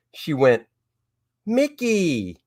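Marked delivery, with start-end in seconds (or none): 1.5-2.3 put-on cute, high, soft little toddler voice. Retelling what a one and a half year old said on seeing this: imitating a toddler's cute voice. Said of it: "in her cute little one and a half year old voice".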